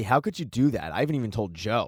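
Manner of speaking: usual speaking voice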